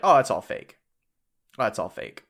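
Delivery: put-on careless, offhand, casual dismissive tone. Retelling how he brushed off the allegations: imitating an offhanded dismissal. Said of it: "he just very offhanded is like".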